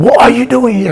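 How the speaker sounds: put-on aggressive, very loud, shrill, high-pitched voice. Retelling what the people who knocked on the door shouted, imitating a very loud voice. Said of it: "With a very loud tone voice".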